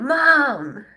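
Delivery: put-on mad griping with drawn-out "mom". A mother retells what her adult son said after the Super Bowl, imitating an angry son. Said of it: "He was so mad".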